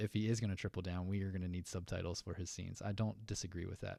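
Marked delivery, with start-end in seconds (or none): none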